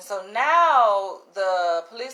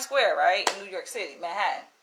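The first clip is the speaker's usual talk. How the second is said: ordinary delivery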